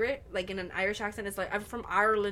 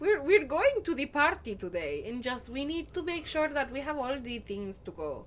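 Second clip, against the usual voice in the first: attempted, put-on Latin American accent; 4 semitones higher than usual.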